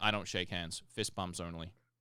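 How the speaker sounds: low, quiet, cold, rude standoffish tone. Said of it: "it came across so rude".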